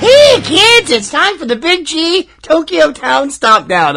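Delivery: drawn-out, exaggerated silly delivery. Speaker opens a new segment: Binky the Clown voice. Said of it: "in kind of a Binky the Clown voice".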